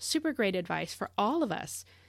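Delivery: normal talking voice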